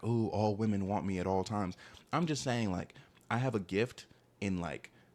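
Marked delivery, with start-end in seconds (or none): none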